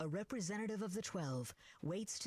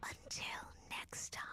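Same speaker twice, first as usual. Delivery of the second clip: soft, breathy whisper under the breath. The narrator voices the falling succubus's last words, whispered. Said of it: "she whispers".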